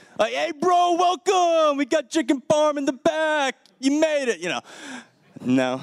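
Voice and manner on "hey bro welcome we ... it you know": very high, put-on New Jersey accent. Imagining an angel greeting people into heaven: jersey accent. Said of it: "I wish they had like a Jersey accent on there. Like".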